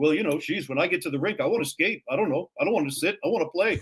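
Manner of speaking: little, quiet, soft-spoken small voice. Quoting Cruz answering the speaker's question, in Cruz's little soft-spoken voice. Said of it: "in his little soft-spoken voice".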